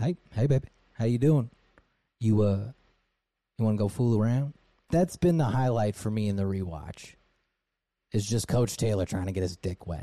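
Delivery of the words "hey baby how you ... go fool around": Southern drawl, flirtatious. Acting out Coach Taylor talking to his wife, from your rewatch: Coach Taylor southern drawl. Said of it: "a football coach in Texas with his southern drawl".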